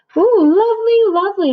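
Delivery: high, loud, squeaky mouse voices. Reading a story aloud, voicing the mice given the woolly hat, squeaky mice voices. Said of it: "they squeaked".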